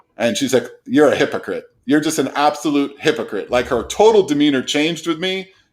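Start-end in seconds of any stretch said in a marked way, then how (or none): none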